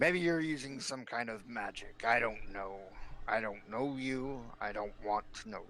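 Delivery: sullen, surly, curt and dismissive. Game master voicing a bronze dragon who distrusts a newcomer, surly. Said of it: "Uh, you find the bronze dragon. Now he looks up in a surly voice and he just, / Now he looks up in a surly voice and he just, / Now he looks up in a surly voice and he just".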